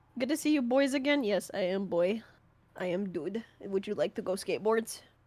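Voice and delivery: put-on, fake Russian accent. Joking around during a tier list discussion, fake russian accent. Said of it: "Why are you a Russian".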